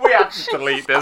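laughing helplessly, unable to stop.

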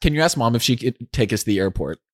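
ordinary talk, nothing marked

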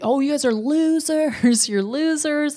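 play-acted, high, jeering, taunting yell, laughing midway. Retelling a movie scene where a character taunts a passing team, retelling a mocking yell. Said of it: "Dustin starts yelling".

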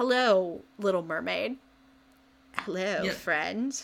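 soft, put-on ASMR half-whisper. Retelling a character speaking into a shell: imitating Regina's ASMR half-whisper. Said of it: "A S M R whisper into the".

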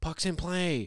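high, play-acted screaming call. Retelling the stepdad arriving at the game: imitating someone screaming. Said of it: "he's just screaming".

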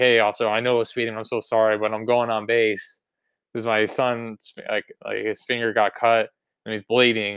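ordinary talk

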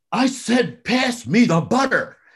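mock shrill toddler scream, very high, drawn-out. Retelling a story of a little boy at the family table: imitating a child screaming. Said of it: "he screams out".

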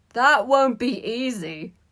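very loud, slow, gleeful hooting. A student on the laughing Slytherin side mocks a classmate; gleeful hoot. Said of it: "hooted Malfoy gleefully".

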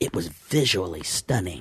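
very low, hushed, dramatic movie-trailer narrator voice. Quoting movie reviews the way they sound in the speaker's head, in a movie-guy voice. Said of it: "it's like movie guy voice".

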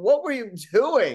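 high-pitched, shrill screaming yell. Retelling screaming at the TV about a rebound: imitating own screaming. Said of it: "I was screaming at my T V".

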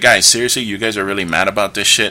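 ordinary delivery

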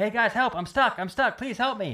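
acted-out shout. Retelling being stuck underground and calling to the guys; retelling shouting for help. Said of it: "I'm like shouting for the guys".

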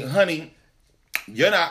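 usual speaking voice

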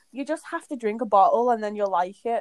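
ordinary talk

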